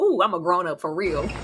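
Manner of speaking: thrilled, gleeful outburst bursting with excitement. Reacting to a played clip, imitating his excitement. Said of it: "'Cause he's so excited".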